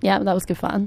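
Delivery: unconvinced tone. Closing the radio episode with the co-host: unconvinced tone. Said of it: "You don't sound convinced by that".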